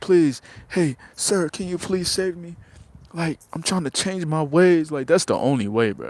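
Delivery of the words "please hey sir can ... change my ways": high, begging, pleading woman's voice. Acting out a woman grabbing a man's garments: imitating a woman pleading. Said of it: "she gonna have to be pleading".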